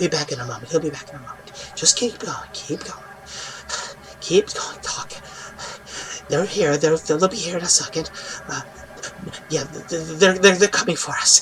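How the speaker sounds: barely voiced, creepy, hushed, whispered creature chatter. Retelling what a creature whispered after it stopped laughing: creature's whisper. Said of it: "And then starts to whisper".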